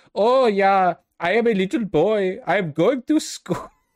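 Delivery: very high, slow, put-on comedy German accent. Mimicking how a man's accent sounds to an american, in a comedy german accent. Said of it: "it sounds German to me".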